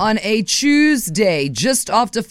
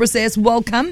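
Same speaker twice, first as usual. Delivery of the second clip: ordinary talk, nothing marked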